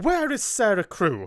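almost fierce tone, pitched very high. Miss Minchin answers her sister Miss Amelia, almost fierce. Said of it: "Miss Minchin's voice was almost fierce when she answered".

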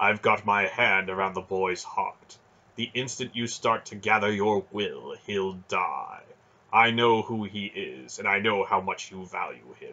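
ordinary delivery

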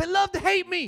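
put-on yelling. Retelling what a player yelled at an away game: imitating someone yelling. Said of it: "he starts yelling".

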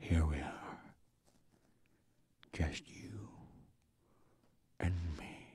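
hushed, slow, breathy, drawn-out whisper. Showing how quietly to talk in a dark room: whispering. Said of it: "You want me to whisper like this?".

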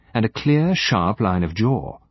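ordinary delivery

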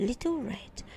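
ordinary delivery

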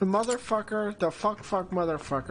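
frantic, raging voice.

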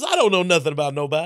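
loud, high-pitched, big cartoonish voice. Quoting an interview line while doing an Eddie Murphy voice. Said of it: "I'm just doing Eddie Murphy".

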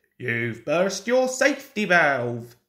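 ordinary delivery

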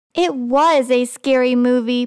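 ordinary delivery

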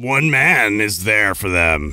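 mock trailer voice, slow and drawn-out.

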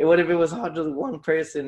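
ordinary talk

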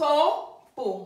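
po hit high and loud, pu dropped. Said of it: "So stress is the highest point".

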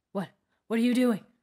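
furious, very loud, angry outburst. A narrator reads the frozen warrior's words to the speaker, asked angrily. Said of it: "he asked angrily".

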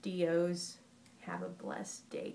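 ordinary talk

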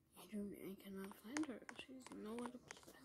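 soft, low, unvoiced sneaky whisper.

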